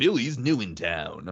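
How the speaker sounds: slow early 2000s movie-trailer narrator voice. Showing how to narrate a movie trailer: early 2000s movie narrator voice. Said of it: "early two thousands movie narrator voice".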